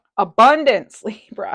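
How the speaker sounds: booming, full-throated, very loud, sudden yell. Card reader announcing the card drawn for Libra, yelling. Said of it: "Sorry for yelling".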